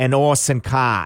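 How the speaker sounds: bad put-on Cockney accent. Explaining the songwriters' pseudonym pun, saying it in a failed cockney accent. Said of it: "It was supposed to be a Cockney accent".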